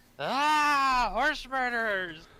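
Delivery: very shrill, very loud, high-pitched shriek. Leaping from a bush after a man walks past, screaming. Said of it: "and just scream".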